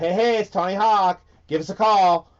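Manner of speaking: put-on American voice, loud and called out. Doing a radio bit as a skateboarder: Tony Hawk impression. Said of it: "I could do Tony Hawk".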